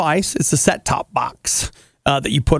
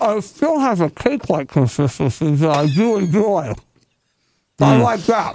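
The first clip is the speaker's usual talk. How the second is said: words mumbled around a mouthful. Tasting a Twinkie, speaker gives their verdict: talking with mouth full. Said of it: "You're not supposed to talk with your mouth full".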